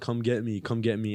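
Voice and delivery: plain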